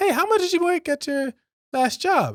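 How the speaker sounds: very high, sugary, friendly, nice happy voice. Imitating a recruiter asking about past salary: imitating a nice, happy voice. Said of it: "this nice, happy voice".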